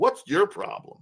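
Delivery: very high, offhand, casual sarcastic tone. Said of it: "that's the way we speak around here".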